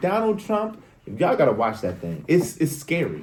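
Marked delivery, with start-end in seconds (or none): 0.0-0.8 piercing, very high-pitched scream. Retelling what the attorney general screamed: imitating someone screaming. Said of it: "She was screaming".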